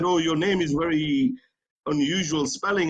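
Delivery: ordinary talk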